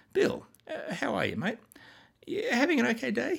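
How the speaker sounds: overly polite, high, casual, chatty tone.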